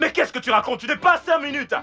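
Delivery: yelling angrily. Arguing with someone who promised five more minutes, angry shouting. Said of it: "Mais arrête de crier!".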